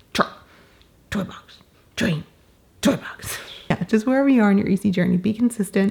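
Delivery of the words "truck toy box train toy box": whispered caveman talk, one word at a time. Showing listeners a trick that worked at home, talking like a caveman. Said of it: "talk like a caveman".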